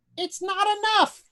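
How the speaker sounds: weird, very high-pitched, lilting voice. Game master voicing a hidden speaker behind a beaded curtain, weird high-pitched lilting voice. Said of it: "a weird, high pitched, lilting voice in English says".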